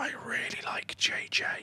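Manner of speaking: very quiet, slow, hushed whisper. Commenting on players to chat: whispering. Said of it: "I don't know why I'm whispering it".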